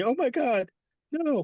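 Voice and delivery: slow, high, stretched-out woman's scream. Retelling a horror story scene: imitating a woman screaming. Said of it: "the woman's just screaming".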